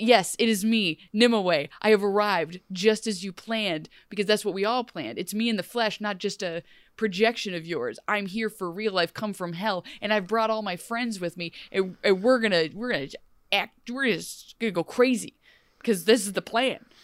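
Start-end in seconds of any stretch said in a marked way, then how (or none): none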